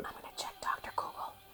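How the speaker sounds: breathy, very quiet under-the-breath whisper. Saying they will look something up online: whispering. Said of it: "you don't have to whisper".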